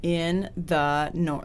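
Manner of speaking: very slow, each word set apart and enunciated. Discussing how to say a phrase, the speaker demonstrates with a period between each word. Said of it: "Like a period between each word".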